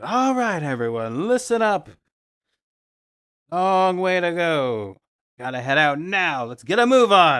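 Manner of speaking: booming, very loud, commanding guard voice. Game master voices a guard telling everyone to head out; booming guard voice. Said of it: "he kind of puts on his booming guard voice".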